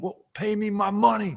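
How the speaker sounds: put-on furious, demanding shout, high pitched. Retelling a man yelling at players over made-up gambling debts, mock yelling. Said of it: "And he's yelling like".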